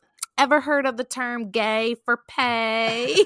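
put-on cute, high Southern accent, drawn-out pay. Retelling what he said to a hot young taxi driver, in Leslie Jordan's cute high-pitched Southern accent. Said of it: "in his little like cute little Southern high pitched accent".

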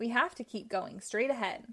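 plain

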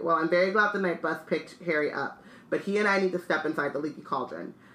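plain reading voice

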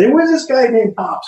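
very high-pitched, loud, shrill screaming. Retelling how the speaker came in loud to shock a man: retelling a scream. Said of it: "And I'm screaming".

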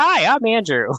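put-on innocent kid voice. Retelling own words as a small child in a waiting room: imitating innocent kid self. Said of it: "innocent kid".

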